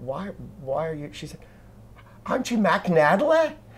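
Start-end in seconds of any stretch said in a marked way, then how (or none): 2.2-3.5 put-on botched Australian accent, pitched up. Retelling an australian girl who mistook the speaker for someone, failed australian accent.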